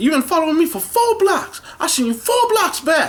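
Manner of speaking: shrill, very loud, high, accusing angry yell. Retelling a stranger on the street confronting the speaker, retelling a stranger's yelling. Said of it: "he's yelling at me like".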